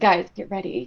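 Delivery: hushed whisper in a character voice. Voicing a character crouching down, warning the group: whispering in character. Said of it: "Gonna whisper".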